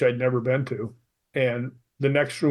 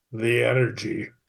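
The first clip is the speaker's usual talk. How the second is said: strong put-on Scottish accent; 2 semitones lower than usual. Retelling the reply a ghost-hunting device gave in a castle, in a very Scottish accent. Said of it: "it came back with a very Scottish accent".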